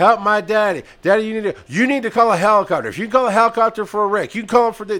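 loud, high-pitched screams. Retelling how panicked adult kids screamed for a helicopter: imitating screaming kids. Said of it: "kids are running around screaming".

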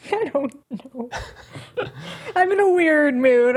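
giggly, laughing through the words. Guessing wrong in a quiz round, giggly while talking. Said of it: "I'm really giggly right now".

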